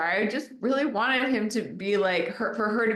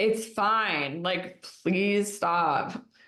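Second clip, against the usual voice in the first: mock annoyed, fed-up, slow and dismissive tone. Retelling a scene with an annoyed Sheridan: imitating annoyed Sheridan. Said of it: "you can hear that she's annoyed".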